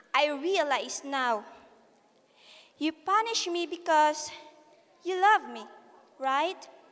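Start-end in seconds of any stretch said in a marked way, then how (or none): none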